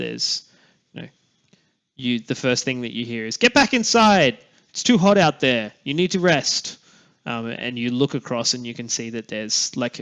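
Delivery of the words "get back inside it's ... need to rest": high-pitched, loud yelling. Narrator voicing a grung calling three running children back inside: grung yelling at children. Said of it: "one grung that's kind of like yelling".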